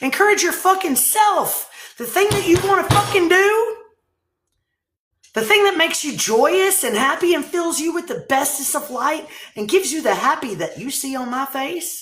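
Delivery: passionate, abrasive tone. A speaker addressing listeners directly, passionate and abrasive. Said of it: "I am being very passionate and kind of abrasive right now".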